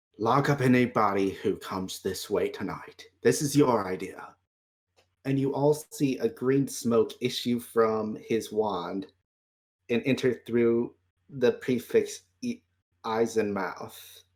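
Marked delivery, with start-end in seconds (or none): 0.2-4.3 hushed whisper, lower. Voicing a character who secretly gives a prefect an order: whispering a command. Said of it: "he whispers to her".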